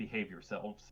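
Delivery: hushed whispering. Leaving the Hala behind, the speaker addresses them before going: whispering. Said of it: "I will whisper to them in Elvish".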